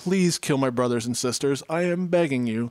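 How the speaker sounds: mock pleading, imitated begging child voice. Retelling a book scene where a child trades family for sweets: imitating a child begging. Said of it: "He's like".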